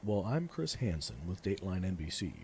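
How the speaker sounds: ordinary delivery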